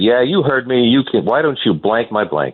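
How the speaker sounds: mocking, jeering, goading taunting tone. Retelling a player's taunt in the clubhouse: imitating Bonilla speaking loudly. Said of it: "he says to me loudly from across the room".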